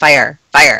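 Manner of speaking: very low, deep, automated woman's alarm voice. Describing the talking alarms at home, imitating the alarm's woman's voice. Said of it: "a woman's voice. It sounds like Madam Web".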